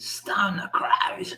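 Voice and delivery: breathy, near-whispered Australian accent. Naming the band again, now saying it like an australian: australian accent. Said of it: "I should have said it like an Australian".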